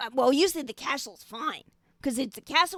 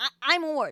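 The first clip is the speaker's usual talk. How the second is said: put-on goblin voice, stammering and hesitant. Voicing a goblin giving its name when asked: goblin character voice. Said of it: "And the goblin says".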